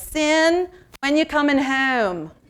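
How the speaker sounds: put-on Baltimore accent. Speaker quoting their mother on the phone: Baltimore accent. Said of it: "Or I could do it in a Baltimore accent".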